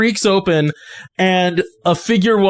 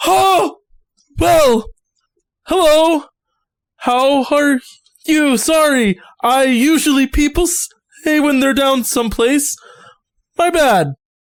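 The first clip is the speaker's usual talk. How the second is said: jumpy, startled, caught-off-guard voice, pitched up; 8 semitones higher than usual. Voicing a lost hermit who jumps when you talk to him, startled. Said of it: "he about jumps out of his skin".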